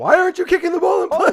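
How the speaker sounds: very high, loud screaming. Retelling a reaction to the game on tv: retelling own screaming at tv. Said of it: "I was screaming at the T V".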